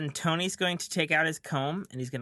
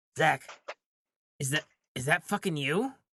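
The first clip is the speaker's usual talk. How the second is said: hushed whisper. Speaker acts out looking up at a suddenly taller zach; whisper. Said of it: "and I'm gonna whisper".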